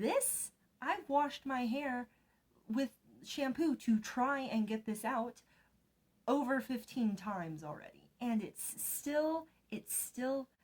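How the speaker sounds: getting heated, high-pitched ranting delivery. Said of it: "I'm getting heated".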